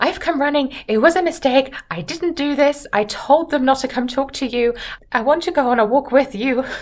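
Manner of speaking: put-on breathless voice. Retelling the novel, acting out Catherine catching up to Miss Tilney: imitating a breathless Catherine. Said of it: "sort of entirely out of breath".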